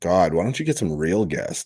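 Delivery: teasing, mocking, sarcastic jab. Retelling what a friend messaged him: imitating a sarcastic remark. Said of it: "he sarcastically says".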